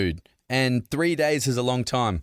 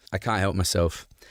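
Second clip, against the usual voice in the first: normal talking voice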